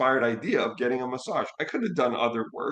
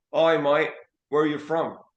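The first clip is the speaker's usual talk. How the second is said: put-on Australian accent, friendly tone; 4 semitones higher, 4 dB louder than usual. Retelling what a stranger in a waiting area said: imitating an Australian accent. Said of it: "he's speaking to me in an Australian accent".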